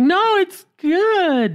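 very high, stretched-out slow, sweet, good-natured voice. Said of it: "her voice goes up".

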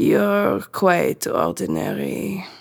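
very dry, weary, put-upon, long-suffering tone. A woman answers Delphine, who asked to be measured; dry, long-suffering voice. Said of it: "said in a very dry, long-suffering voice".

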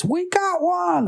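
put-on very high shouted delivery. Retelling a Ghostbusters scene where the secretary gets a call: imitating someone shouting. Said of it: "she shouts".

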